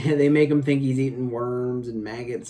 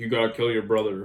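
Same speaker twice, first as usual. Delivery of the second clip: put-on voice dropped way down low; 2 semitones lower than usual. Describing an actor from the Lost Boys, imitating his very low voice. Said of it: "he's so down low".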